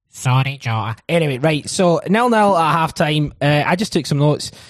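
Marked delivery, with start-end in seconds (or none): 0.1-0.9 nasal put-on football manager voice. Doing an impression of the Hearts manager apologising to Jota: Stephen Naismith impression. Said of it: "Naismith was like this".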